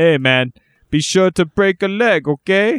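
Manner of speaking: put-on mobster voice. One host jokes to another in a mafia gangster impression. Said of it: "Is that your best mafia impression?".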